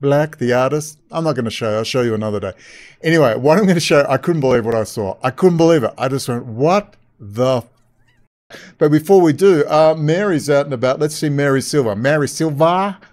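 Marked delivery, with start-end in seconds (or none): 11.9-13.0 bad, weak put-on Boston accent. Introducing a woman by name, admitting a poor attempt: bad Boston accent. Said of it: "I don't do a very good Boston accent".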